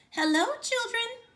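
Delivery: sweet voice, pitched way up. Reading a story: someone greets the discouraged children from the hall, in a sweet voice. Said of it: "someone said in a sweet voice".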